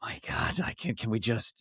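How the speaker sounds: soft, voiceless, exasperated whisper. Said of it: "hear in her answers".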